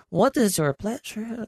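put-on Mexican accent, pitched very high. Quoting the Chinese seller in a story, but doing it in a Mexican accent. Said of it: "that was like a Mexican voice".

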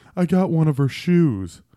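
put-on tearful sobbing. Retelling what a crying woman said when she came in with shoes, imitating her sobbing. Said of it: "she's crying, and she's like sobbing".

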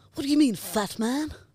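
put-on cartoon character voice and accent. Doing an impression better than the other speaker: Stewie voice. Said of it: "Finally an accent I'm better at".

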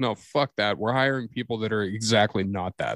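normal talking voice

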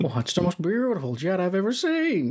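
high, sing-song delivery, pitch swooping up and down. Quoting a line from the film in a Jimmy Stewart impression. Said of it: "your Jimmy Stewart impression".

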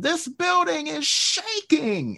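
very high-pitched shout. Retelling a favorite commentary call from a wild crowd: imitating Lawler shouting. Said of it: "And Lawler just shouts out".

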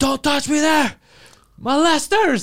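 mock very high, slow, drawn-out accusing yell. Retelling how they shouted at the men outside: imitating own past yelling. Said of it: "I start yelling".

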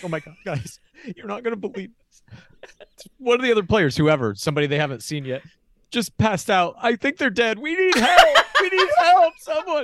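frantic, panicked fake crying, high and loud. Pitching a prank idea for a challenge, the speaker demos frantic fake crying. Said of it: "just be crying like".

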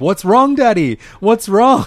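put-on very high, very loud, distraught child's cry. Retelling how a worried child reacted to groaning: imitating Tilly sounding distraught. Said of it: "quite distraught".

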